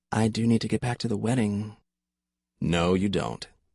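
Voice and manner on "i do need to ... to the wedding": strained, tense whisper. A narrator reads a woman's reply to Riley as he holds her, in a strained whisper. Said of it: "she whispered in a strained voice".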